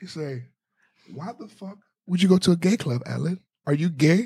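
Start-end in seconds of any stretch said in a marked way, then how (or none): 1.1-4.3 put-on slight Haitian accent. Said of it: "a little Haitian accent".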